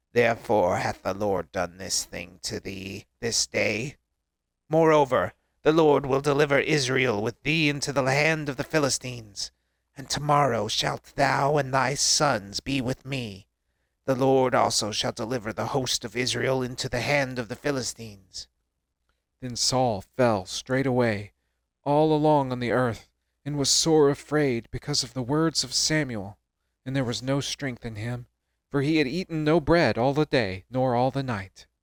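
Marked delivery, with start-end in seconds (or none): 0.2-18.5 rasping zombie voice. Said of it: "my zombie voice".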